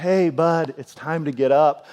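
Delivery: mock-gentle, put-on gentle speech. Retelling how she wakes someone up, imitating a gentle wake-up. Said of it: "She very gently says".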